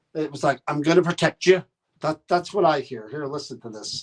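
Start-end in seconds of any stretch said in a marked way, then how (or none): 0.7-1.7 imitated Irish or Scottish accent. Imitating how a voice he heard sounds, Irish or Scottish accent. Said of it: "it almost sounds like an Irish or Scottish".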